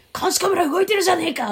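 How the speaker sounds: put-on furious rage, pitched way up. Telling a story, acting out a man's furious outburst. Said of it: "っつってブチギレて".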